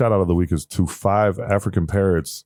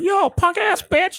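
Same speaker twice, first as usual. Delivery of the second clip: put-on very high, drawn-out little child's voice. Retelling a child insulting him during a game, really high voice. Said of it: "in a like a really high voice".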